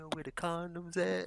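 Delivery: soft, hushed voiced half-whisper under the breath. Retelling how customers ask where the condoms are: imitating someone half-whispering. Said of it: "dudes be walking up to me whispering".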